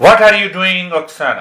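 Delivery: loud, high-pitched, called out to make noise. Demonstrating a noise to a class, the speaker speaks loudly to Oksana. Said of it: "I'm speaking so loudly".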